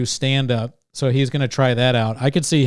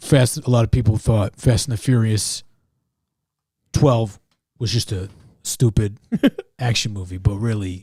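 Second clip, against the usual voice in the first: bad put-on raspy actor voice, pitched lower; 3 semitones lower than usual. Giving an asked-for Oscar acceptance speech: terrible Vin Diesel impression. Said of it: "That was terrible. I tried".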